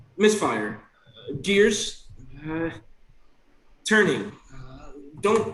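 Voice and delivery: voice and tone shifting with each word. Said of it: "each voice is not their, is of a different tone".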